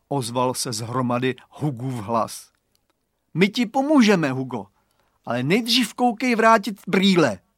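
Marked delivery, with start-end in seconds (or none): 3.3-7.3 strict, no-nonsense, stern, pitched-up voice. Reading a character telling someone trapped under a pile of crates to return the glasses, stern. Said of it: "vyzval ho přísně Radovan".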